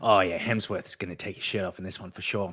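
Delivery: put-on low, creepy, leering old man voice. Acting out someone eating a choc top at the movies: pervy old man. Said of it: "you're sitting like a pervy old man in a park".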